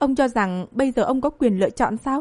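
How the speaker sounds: plain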